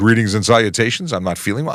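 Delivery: plain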